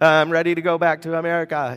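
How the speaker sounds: ordinary talk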